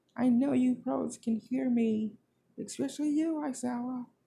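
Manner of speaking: high, furious, desperate yelling.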